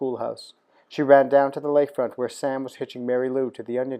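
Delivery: ordinary delivery, nothing marked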